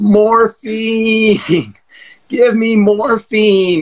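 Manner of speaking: drawn-out begging. Retelling waking after knee surgery on a gurney: imitating himself begging for morphine. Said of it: "some disembodied voice begging for morphine".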